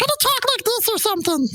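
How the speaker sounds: very high, silly, squeaky cartoon voice. Trying out a voice for a planned cartoon character, really high, stupid cartoon voice. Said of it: "That's really high and stupid".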